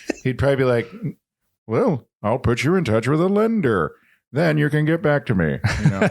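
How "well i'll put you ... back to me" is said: courteous professional tone. Saying how the agent would answer a buyer: Ted Koppel impression. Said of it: "my best impression".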